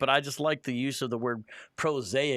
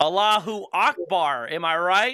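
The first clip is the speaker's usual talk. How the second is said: bad fake voice, slow, loud, drawn-out, overeager; 5 semitones higher, 6 dB louder than usual. Joining a joke about agents posing badly: imitating a bad impostor. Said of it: "they just weren't very good at pretending".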